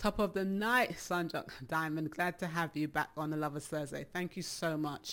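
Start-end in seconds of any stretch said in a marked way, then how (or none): none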